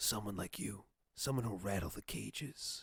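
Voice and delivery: harsh, low, barely-there whisper. Describing the Batman Begins voice answering Katie Holmes: Batman harsh whisper. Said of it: "that kind of like harsh whisper".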